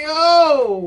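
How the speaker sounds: stunned, high, loud yell. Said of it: "I'm legit thinking".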